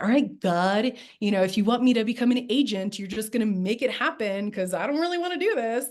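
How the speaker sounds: thick, heavy, openly mocking sarcasm. Retelling own words to God while putting a package in: retelling own sarcastic words. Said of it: "very sarcastically put a package in".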